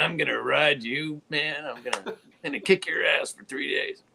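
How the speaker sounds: high, jeering, taunting tone. Retelling what a guy said while grinning at him: retelling a grinning taunt. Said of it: "and he's grinning at me, going".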